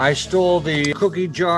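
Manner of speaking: high, sloshed delivery. Reading a line in an interview, sounding drunk. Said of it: "If he's that wasted in a T V interview".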